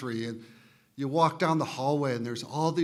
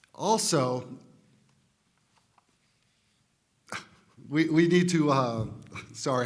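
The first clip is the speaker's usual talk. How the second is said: talking through laughter, much slower; 4 dB louder than usual. Board candidate addressing parents, laughing at a grandson mid-speech, laughing while talking. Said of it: "I'm laughing at my grandson".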